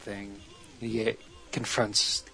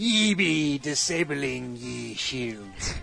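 exaggerated, full-on pirate voice; 4 semitones higher, 4 dB louder than usual. Describing a scene where a computer misreads a command, in Nick Offerman's super piratey voice. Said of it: "with his super piratey voice".

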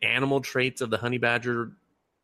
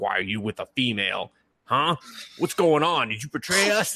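put-on nerdy voice. Retelling a college visit, speaker quotes his super-nerd friend: imitating a nerdy friend. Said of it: "he has like this super nerd friend".

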